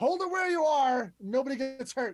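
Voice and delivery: very loud, high-pitched shout. Charging at foes in the game, shouting a warning to hold still. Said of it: "and I'm just going to shout".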